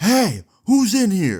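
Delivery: put-on very high, very slow, drawn-out shout. Retelling the man upstairs yelling again: imitating someone yelling. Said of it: "the guy yells again".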